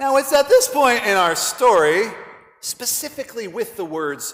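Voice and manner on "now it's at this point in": plain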